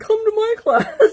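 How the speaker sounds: very high, very loud, drawn-out yelling. Retelling calling out to another class nearby: retelling own yell. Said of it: "like, yelling".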